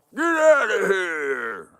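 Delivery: mock yell with swooping shoo and drawn-out here. Telling a story, the speaker retells Santa Claus yelling at the bear. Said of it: "I understand why he's yelling at him".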